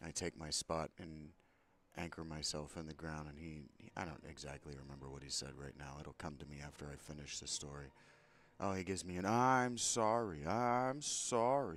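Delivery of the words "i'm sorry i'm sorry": exaggerated sarcastic shout, very loud, drawn out. Retelling a man's apology during a confrontation, retelling a sarcastic yell. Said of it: "Big sarcastic yelling".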